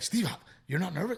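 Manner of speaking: acted-out jittery, high, rushed nervous babble. Retelling what a nervous friend asked before a show: imitating nervous Johnny. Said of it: "Johnny gets very nervous".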